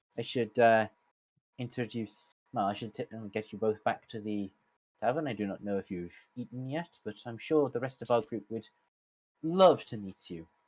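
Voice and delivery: soft, sad Irish lilt. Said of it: "I can hear the sadness in your voice".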